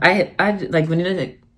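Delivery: stuttering, stammering speech. Describing a favorite farm visit, the speaker trips over words, stuttering. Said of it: "I'm stuttering".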